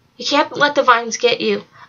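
ordinary delivery

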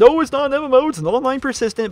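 high, mocking put-on parody voice. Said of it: "They keep, they keep on saying".

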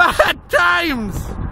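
put-on yelling.

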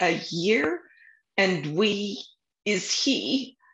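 very slow, broken, halting stammer. Narrator reads a man with his head spinning, scrambling to do the math: stuttering. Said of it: "he stuttered".

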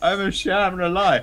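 put-on crying, fake sobbing. Player imagining a crit failure outcome, mock crying. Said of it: "curl up and cry and go".

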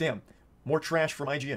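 ordinary talk

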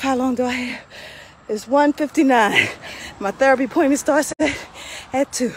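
winded, panting, out of breath between breaths. Just finished a timed workout before a therapy appointment, out of breath. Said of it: "Let me catch my breath".

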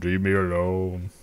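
put-on deep, low voice. Imitating a baby refusing what it's given, in a put-on deep voice. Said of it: "Just like deep voice".

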